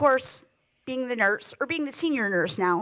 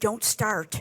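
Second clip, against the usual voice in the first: put-on whisper, lower; 4 semitones lower than usual. Retelling a brother's warning in the hospital: imitating a whisper. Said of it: "my brother whispers to me".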